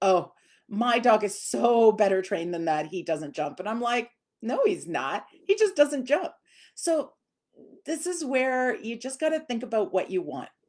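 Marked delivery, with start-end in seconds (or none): none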